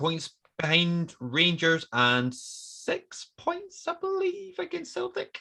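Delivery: voice rising unexpectedly high and swooping. Talking to the other speaker mid-conversation, in a high-pitched voice. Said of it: "my voice is so high when I'm saying that".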